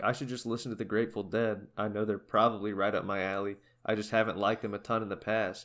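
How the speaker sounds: normal talking voice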